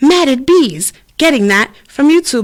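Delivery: put-on voice assistant voice. Retelling how the remote's assistant misheard the request: imitating Alexa. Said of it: "And she's like".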